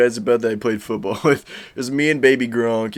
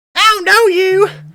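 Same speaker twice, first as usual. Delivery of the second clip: put-on little kid voice, higher and louder; 9 dB louder than usual. Imitating own childhood self, who sounded like Bobby Hill: Bobby Hill voice. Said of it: "I sound like Bobby Hill when I was younger".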